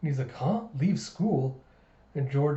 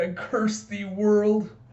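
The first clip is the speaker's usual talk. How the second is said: acted, slow, drawn-out, pitched-up tearful crying; 6 semitones higher, 4 dB louder than usual. Retelling a kid who cries and curses the world: mock crying. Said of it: "And he's crying".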